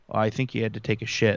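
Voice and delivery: stoic, dead-level, flat deadpan monotone. Repeating Daryl Sutter's remark word for word, Daryl Sutter deadpan monotone. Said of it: "he's very stoic and very just monotone".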